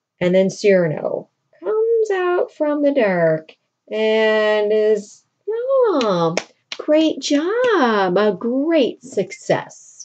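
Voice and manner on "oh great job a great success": mocking, slow, swooping sarcasm with a long oh. Retelling a play's plot, voicing one character mocking another, acting out sarcastic remark. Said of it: "being all sarcastic with him".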